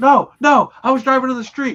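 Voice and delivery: acted very high, furious. Retelling talking to a cop, the speaker quotes the woman driving on the shoulder, acting out her being mad. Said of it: "she was so mad".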